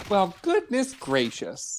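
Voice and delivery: really sincere, heartfelt and genuine tone. In a phrase game, answering a young person who helped with groceries, really sincere. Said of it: "Really sincere with that one".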